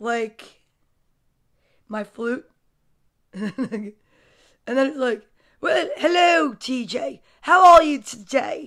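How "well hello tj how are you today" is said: posh, toffish upper-class voice. Imagining something stuck on her flute greeting tj, in a monocle-wearer voice. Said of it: "If I only had a monocle, I could speak like this".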